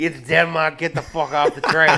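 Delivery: put-on heavy Boston accent. Speaker impersonates an antagonistic transit employee; heavy boston accent. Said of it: "like a heavy Boston accent".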